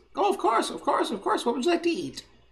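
very high, squeaky little gnome voice. A hotel front-desk clerk takes a room-service order from a caller: high-pitched child or gnome voice. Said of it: "Sounds high-pitched, probably either a child or a gnome".

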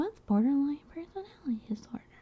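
quiet whisper. Imagining listeners asking about a diagnosis: whispering. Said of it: "I don't know why you had to whisper that".

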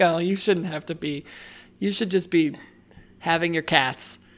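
ordinary delivery

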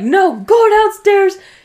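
loud, slow, angry yell. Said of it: "I'll yell at her".

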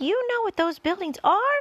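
thrilled, excited, very high-pitched shout. James, seeing the buildings, shouts to his friends with excitement. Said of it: "shouted James, jumping up and down with excitement".

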